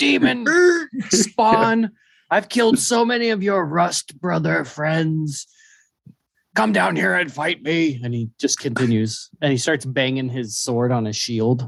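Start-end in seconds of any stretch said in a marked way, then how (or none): 0.0-8.0 high, shouted, taunting yell. Narrating a fight, voicing Garm as he yells at the creature again: Garm yelling a challenge. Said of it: "he yells at it again and says".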